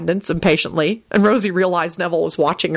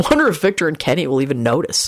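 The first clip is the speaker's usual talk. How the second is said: ordinary delivery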